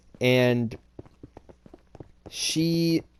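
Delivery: very slow, halting, stumbling stammer, broken off. Speaker on video struggling to talk about a difficult personal subject, stuttering. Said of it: "so I'm stuttering".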